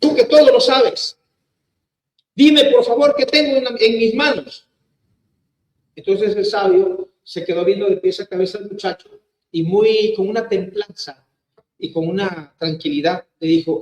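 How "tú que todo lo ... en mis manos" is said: sarcastic, ironic, mocking, needling tone, pitched up. Retelling a parable, a young man taunting an old sage: imitating ironic mockery. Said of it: "burlándose con ironía".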